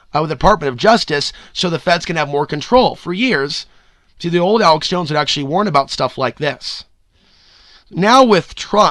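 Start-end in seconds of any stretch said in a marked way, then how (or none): none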